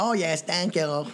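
squeaky helium voice, very high, slow, drawn out. Retelling how a girl the speaker was seeing thanked them for a camera: helium-sounding voice. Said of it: "she sounded like she inhaled helium".

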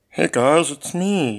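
divine, heavenly deity voice. Urged by friends to do it, the speaker greets them: voice of God impression. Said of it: "Do the voice of God impression".

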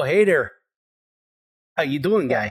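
put-on fake Minnesota accent. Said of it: "my Minnesota accent".

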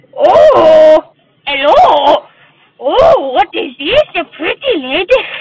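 "oh" very slow, loud and long drawn out. Asked by the other speaker to do an impression: Adam Sandler impression. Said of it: "Adam Sandler impression".

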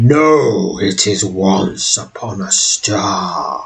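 deep, rumbling voice with drawn-out "no". A stone face in the wall springs to life and speaks, deep, rumbling voice. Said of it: "begins speaking in a deep, wumbling voice".

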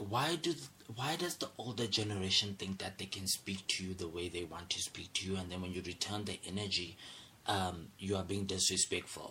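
ordinary talk

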